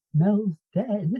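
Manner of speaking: soft, quiet, small hushed voice. Retelling the only thing a character could say, in a quiet little voice. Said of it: "this quiet little voice goes".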